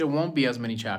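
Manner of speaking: ordinary talk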